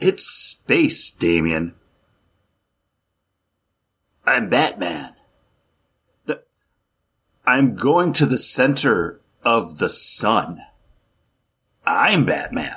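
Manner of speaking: dramatic, theatrical reading aloud. Reading a comic book panel aloud as a dramatic reading. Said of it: "let's get ready for a dramatic reading".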